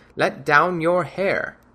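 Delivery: put-on cracked old woman voice, loud and slow. Narrating a tale where he imitates the hag calling up to the window, cracked old hag voice. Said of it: "Imitating the cracked tones of the hag".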